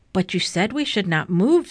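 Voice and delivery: ordinary talk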